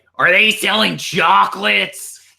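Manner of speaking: rough-edged, creaky woman's voice. Talking about the voices they try to do, imitating a lady's voice. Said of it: "the lady who's like".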